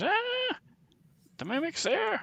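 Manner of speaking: very high, swooping, panicked, frightened shriek. Voicing a character who spots the mimic: screaming in fright. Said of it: "Fibblestip screams".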